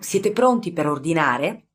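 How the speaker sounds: ordinary delivery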